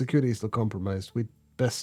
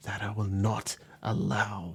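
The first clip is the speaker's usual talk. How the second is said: quivering, trembling, hushed half-whisper; 2 semitones lower, 7 dB quieter than usual. Narrator reading a character's final words: dropping to a half-whisper. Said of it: "his voice dropping to a whisper".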